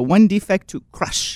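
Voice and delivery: put-on slow, animated voice with thick French accent. Retelling how a very animated priest delivered the line: imitating an animated French priest. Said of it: "came up like in an uppercut and go".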